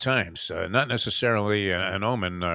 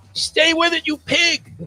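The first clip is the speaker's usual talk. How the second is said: high, loud yelling.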